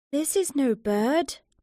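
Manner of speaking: frightened, slow, drawn-out words. The first to speak after a terrible silence in the wood, in a scared voice. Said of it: "he said in a scared voice".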